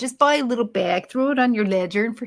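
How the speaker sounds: fake, put-on, bad New York accent. Repeating the other speaker's advice back, the speaker mimics it: bad New York accent. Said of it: "Sound like a New Yorker right there".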